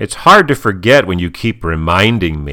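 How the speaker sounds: ordinary talk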